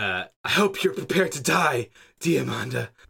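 panicky, frantic, angry, furious delivery. Narrator voicing Angel, Damon's younger sister, confronting Diamanda: panicked and angry. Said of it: "she sounds panicked and angry".

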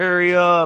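acted-out furious tone, very high-pitched. Retelling a movie scene where she orders it to fire again: imitating someone pissed off. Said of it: "all pissed off".

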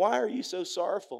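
light, friendly tone, pitched high. Acting out a scene with two disciples walking: acting as Jesus. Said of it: "I'm gonna act in the role of Jesus".

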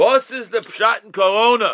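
mock booming voice. Retell how a very famous visitor from Bnei Brak questioned Reb Chaim, in Reb Eliyahu Mann's booming voice. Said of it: "he's a booming voice".

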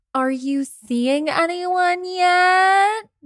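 high, dramatic, annoying, nosy busybody voice. Asking the episode title question as people do at holidays: dramatic annoying mimicky voice. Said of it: "a very dramatic and annoying mimicky voice".

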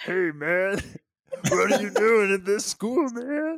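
very high, squeaky mash-up voice. After struggling to say the comedian's name, speaker tries Mr. T meets Bobcat Goldthwait. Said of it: "Mr. T meets like Bobcat Goldthwait".

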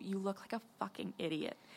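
very quiet, hushed, scornful, disparaging whisper. Narrating a scene, voicing a woman who whispers to you while walking past: whispering. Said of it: "she whispers to you".

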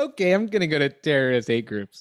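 mock speech broken up by laughter. Repeating the other speaker's line back: imitating someone laughing while talking. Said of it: "you said it, like, while you're laughing".

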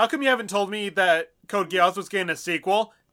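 plain

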